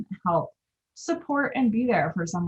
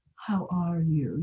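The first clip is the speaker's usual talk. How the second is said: loaded, heavy, meaningful tone, quieter; 3 dB quieter than usual. Advising how to greet someone going through something awful, in a loaded tone of voice. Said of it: "that, like, loaded tone of voice".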